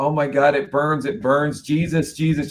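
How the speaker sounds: mock frantic screaming. Retelling a woman's screams heard in an exorcism video, retelling frantic screaming. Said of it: "just screaming so frantically".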